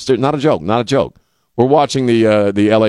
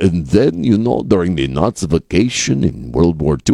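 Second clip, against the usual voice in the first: put-on Russian accent, lower in pitch; 4 semitones lower than usual. Imitating Putin talking about history: Putin Russian accent. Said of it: "I just love doing the Russian accent".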